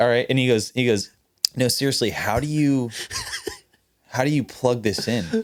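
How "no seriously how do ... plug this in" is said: dead-earnest, sincere delivery. Retelling what a new guitar tech asked on the first day: imitating the guitar tech. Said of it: "Your impression right now is so good".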